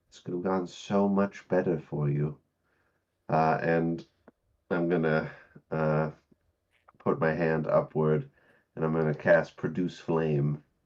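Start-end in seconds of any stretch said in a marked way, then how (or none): 0.1-2.3 disappointed, let-down delivery. Looking up at the other drow in character: disappointed in character. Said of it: "drow disappointedly".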